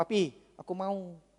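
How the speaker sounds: put-on soft small-child voice. Retelling a small child in a mall asking a father for a toy: imitating a small child asking. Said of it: "dia ngomong gini".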